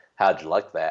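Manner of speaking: put-on deep Southern accent, man's voice. Retelling what a man behind them said while walking to the hotel, in a deep Southern accent. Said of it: "big Southern deep accent".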